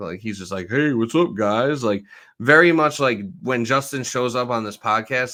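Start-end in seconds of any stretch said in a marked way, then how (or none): 0.7-1.8 offhand, casual, douchey, full-of-himself tone. Mocking a football player's video greeting: imitating a douchey greeting. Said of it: "he comes off like such a douchebag".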